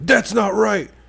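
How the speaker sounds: angry heckling delivery. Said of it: "he's like".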